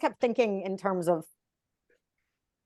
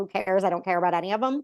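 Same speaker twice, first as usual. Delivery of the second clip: plain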